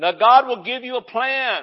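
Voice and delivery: excited, high-pitched preacher-style yelling. A self-described screamer preacher, excited today, preaching: yelling. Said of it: "I don't know why I'm yelling today".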